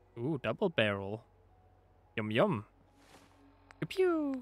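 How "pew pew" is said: very high, excited pew pew sound effect. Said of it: "Sorry, I'm super excited".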